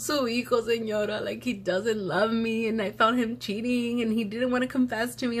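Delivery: tearful, high, gasping, tattling whine.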